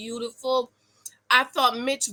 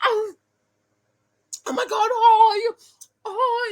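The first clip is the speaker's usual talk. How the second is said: very high, very slow, drawn-out speech with mouth full; 10 semitones higher than usual. Imitating a reality show cast member Kristen: imitating talking with food in mouth. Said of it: "she talks like she has hot soup in her mouth".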